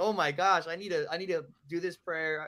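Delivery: ordinary delivery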